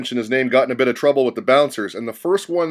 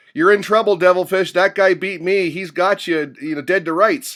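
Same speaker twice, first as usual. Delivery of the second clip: put-on shout, higher pitch; 6 semitones higher than usual. Retelling calling out to a poker player from the rail: retelling own shout. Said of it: "I shouted out".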